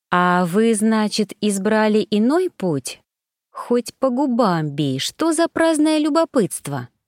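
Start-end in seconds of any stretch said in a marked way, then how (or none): none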